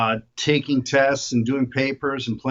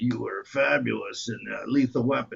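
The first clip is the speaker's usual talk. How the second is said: put-on whispered old man voice, quieter; 5 dB quieter than usual. Act out two old men complimenting each other's films in a scene, in a whispery old man impression. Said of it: "they both whisper, and now they're both really old".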